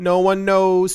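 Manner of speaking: sudden, loud, full-blast screamed outburst. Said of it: "sorry for screaming".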